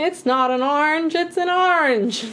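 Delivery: slow frog puppet voice. Trying the old voice again after being teased for it, Kermit the Frog voice. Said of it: "It's hard to say it like Kermit like that".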